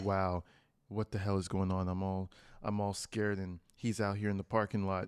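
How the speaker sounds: very low, soft, calm, composed, hushed voice. Reacting to a video, speaker imitates a woman talking to the camera: imitating her calm tone. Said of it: "she had the calm tone of voice".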